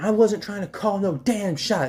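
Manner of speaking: play-acted high, angry yelling. Retelling own past words in a school argument, retelling own angry yell. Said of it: "and I'm just yelling".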